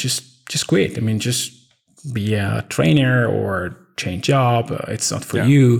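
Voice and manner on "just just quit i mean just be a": usual speaking voice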